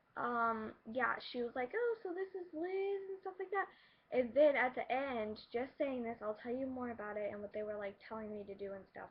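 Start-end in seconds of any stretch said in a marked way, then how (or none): 1.7-3.6 very high-pitched, irritating doll voice. Recalling a lady at her school, imitating Miss Cook's high voice. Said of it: "she has like this really high voice, kind of like Barbie".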